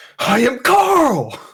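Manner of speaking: very high enraged battle shout, a word drawn out. Voicing a character bursting out of a web in a rage: raging in-character shout. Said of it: "he goes into a rage".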